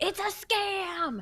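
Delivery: mock child's accusing yell, very high, drawn out. Recounting a boy at the fair pointing and yelling, retelling a boy's yell. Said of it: "just looks and points and yells".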